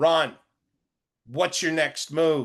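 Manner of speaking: put-on light Australian accent, calling out with rising tone. Retelling how the guide called up from below: imitating guide's Australian accent. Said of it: "yelled up in her Australian accent".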